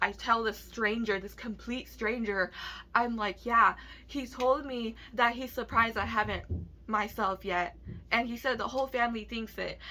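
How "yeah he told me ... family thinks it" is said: ordinary talk, nothing marked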